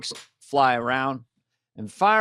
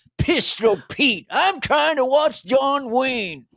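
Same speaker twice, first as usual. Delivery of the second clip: mock grumpy old man voice, pitched higher; 11 semitones higher, 3 dB louder than usual. Joking about fireworks in theaters, playing a grumpy old man. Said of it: "I'm a grumpy old man".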